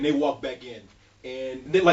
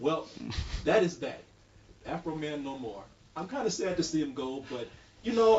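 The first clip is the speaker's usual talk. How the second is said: ordinary delivery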